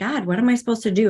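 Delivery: desperate, pleading, crying-out voice. Retelling the moment of asking God for help: retelling crying out to God. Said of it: "I cried out to God".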